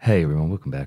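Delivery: mock groggy, low, sleepy, just-woken-up voice. Imitating other podcasters' openings, as if just woken up: mock-sleepy, low and quiet. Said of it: "it's like they've just woken up ... it's so low and quiet".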